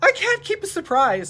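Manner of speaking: high, loud, excited blurting.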